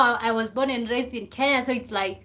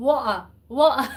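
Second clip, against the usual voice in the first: fake, attempted London accent, put on. Speaker tries out a word in a London accent, fake London accent. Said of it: "I can say water".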